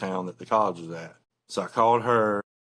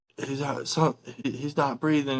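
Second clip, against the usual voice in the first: mock frantic, high panicked cry, broken off; 6 semitones higher than usual. Retelling a frantic phone call, the speaker imitates her panicked screaming. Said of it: "And she's like just screaming".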